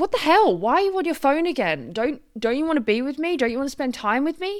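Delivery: high, hurt, upset outburst blurted out. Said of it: "you can hear the change in my voice".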